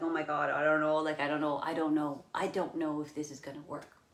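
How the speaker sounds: normal talking voice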